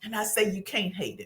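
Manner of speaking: plain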